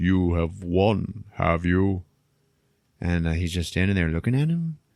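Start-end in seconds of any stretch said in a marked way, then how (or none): 0.0-2.0 big, weird, slow, drawn-out voice. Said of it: "starts talking to him in like a big weird voice".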